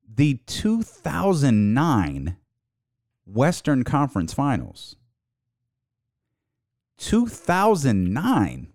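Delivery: slow, deliberate, each word laid out with care. Repeating a point one more time, saying it slower. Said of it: "and I'll say it slower".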